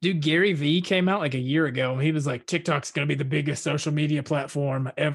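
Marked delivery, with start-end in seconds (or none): 2.5-5.1 bold talk-radio style proclamation, prophetic in tone. Retelling Gary Vee's prediction about TikTok in an Alex Jones voice. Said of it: "I made him sound like Alex Jones".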